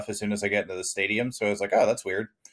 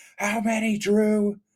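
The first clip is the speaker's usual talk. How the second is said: put-on, very high-pitched screaming; 13 semitones higher than usual. Retelling heckling from seats behind the bench: retelling own screaming. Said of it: "I was just screaming".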